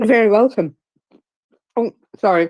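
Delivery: speaking with mouth full. Replying to thanks from a co-host, speaking with mouth full. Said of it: "I've got a mouthful of popcorn now".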